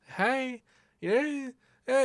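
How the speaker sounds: falsetto head voice, very high. Showing how to shift formants toward a feminine voice: falsetto voice. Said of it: "sort of falsetto kind of stuff".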